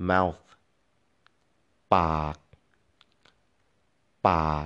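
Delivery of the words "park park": park held on a low tone. Demonstrating a word's pronunciation in a tone lesson, say it with a low tone. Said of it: "Low tone".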